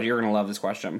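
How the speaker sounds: ordinary talk, nothing marked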